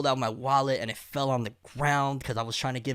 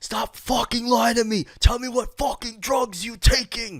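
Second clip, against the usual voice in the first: high-pitched, shrill, loud, in-your-face screaming; 10 semitones higher, 6 dB louder than usual. Retelling a cop who kept demanding which drugs were taken, imitating a cop screaming. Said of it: "And he keeps screaming".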